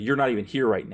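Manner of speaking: ordinary talk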